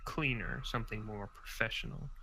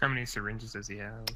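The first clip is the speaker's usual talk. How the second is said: ordinary talk, nothing marked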